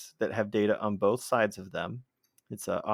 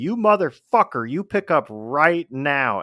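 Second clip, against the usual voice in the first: very loud, slow, drawn-out yell, pitched up; 5 semitones higher, 10 dB louder than usual. Retelling yelling at the phone after someone declined the call, retelling own yelling. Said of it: "I yelled at my phone".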